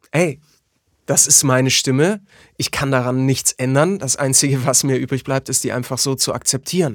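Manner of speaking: ordinary talk, nothing marked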